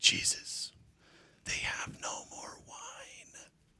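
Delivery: mock whisper, slow and hushed, with urgent intensity. Acting out how she would have told Jesus about the wine, retelling with intensity. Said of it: "she would have said it with such an intensity".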